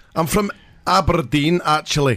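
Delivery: put-on Glaswegian accent. Asked to say it again, the speaker is doing a Glaswegian accent. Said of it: "That's a Glaswegian accent I'm doing".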